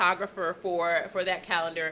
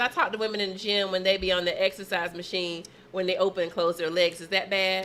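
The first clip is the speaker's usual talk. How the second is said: ordinary delivery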